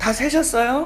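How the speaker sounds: slightly annoyed. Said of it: "약간 짜증을 내시더라고요".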